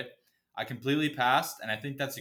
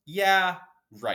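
normal talking voice

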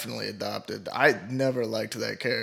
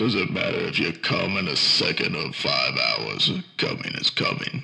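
exaggerated, way too deep voice; 6 semitones lower than usual. Trying your impression a second time with this thing on, do a way too deep Vin Diesel impression. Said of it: "That's like way too deep".

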